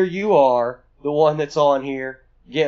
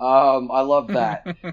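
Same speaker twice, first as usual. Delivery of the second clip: ordinary talk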